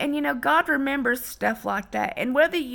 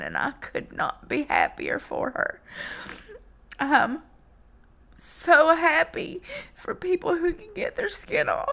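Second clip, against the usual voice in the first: tearful, pitched-up talking, crying through the words; 5 semitones higher than usual. Speaker talking about a friend getting her skin treated, crying while talking. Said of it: "Why am I crying like this all day?".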